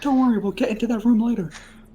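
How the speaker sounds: whispering in a put-on character voice. Whispering to Freddy in character about the room. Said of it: "I'm gonna whisper to Freddy".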